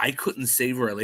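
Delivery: ordinary delivery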